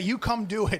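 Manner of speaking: ordinary delivery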